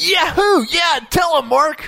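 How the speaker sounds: put-on, very high, whooping cheer. Describing listeners at home reacting to an argument, imitating cheering fans. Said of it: "they were cheering. They were going".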